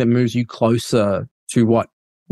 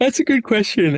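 high-pitched, said through a yawn; 11 semitones higher than usual. Asked what they learned as an outsider to the religion, the speaker answers yawning. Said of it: "with a yawn".

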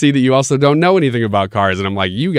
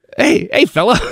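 raised, high small-person voice; 10 semitones higher than usual. Acting out a little guy's greeting, high little-guy voice. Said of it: "I have to talk with a higher voice because he's little".

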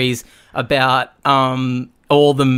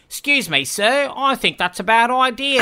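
shoddy, very high put-on Australian accent; 10 semitones higher than usual. Imitating a guy in a movie's office scene: shitty Australian accent. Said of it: "does this shitty Australian accent".

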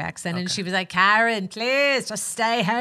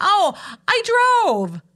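very high, flustered, nervous laughing voice; 12 semitones higher, 7 dB louder than usual. Retelling her answer when asked how she got to Griffith: mock-nervous reply. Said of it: "I nervously laughed".

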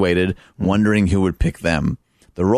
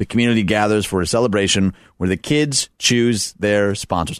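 usual speaking voice

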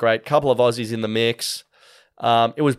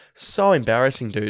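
ordinary delivery

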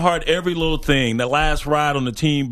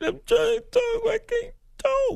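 very high, sob-choked fake crying; 5 dB quieter than usual. Trying to talk after being asked to sound like crying: fake crying. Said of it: "I'm crying".

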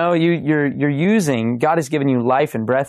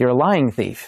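normal talking voice

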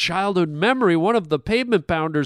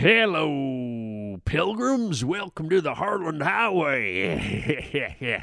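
put-on very slow, hushed, creepy old cowboy voice; 3 semitones lower, 5 dB quieter than usual. Greeting listeners to the harland highway, in a creepy old cowboy voice. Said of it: "started with creepy old cowboy guy".

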